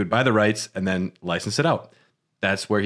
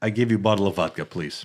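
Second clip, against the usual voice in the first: bad, fake, put-on Russian accent. Playing a comedy scene bribing the KGB with vodka, bad Russian accent. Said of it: "we have bad Russian accents".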